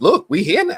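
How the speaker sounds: very high voice cracking and breaking. Speaker greeting a Seattle audience, voice cracking. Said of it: "My voice did that".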